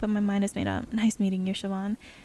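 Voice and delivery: ordinary delivery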